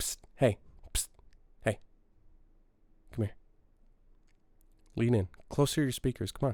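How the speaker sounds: soft, hushed whisper under the breath. A game reviewer calls listeners closer to their speakers, whispering. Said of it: "I'm whispering here".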